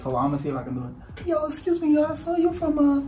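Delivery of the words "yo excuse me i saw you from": put-on much higher, young seventh grade boy voice. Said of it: "I'ma even bring up the voice".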